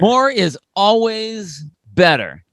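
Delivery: dripping, mocking sarcasm. Co-host mocking a team for going really heavy, sarcastic. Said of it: "Hope you guys can hear the sarcasm".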